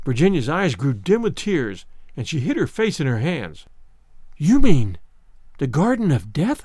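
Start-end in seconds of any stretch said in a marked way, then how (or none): 4.4-6.7 hushed, soft whisper. Narrator voicing a woman hiding her face in her hands, whispering. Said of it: "She whispered".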